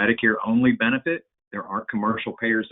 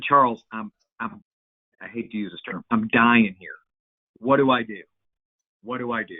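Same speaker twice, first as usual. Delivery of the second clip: put-on distraught voice, near tears, slower. Recounting a phone call from a man he's known twenty years: retelling a distraught plea. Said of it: "very distraught, and he he was close to tears".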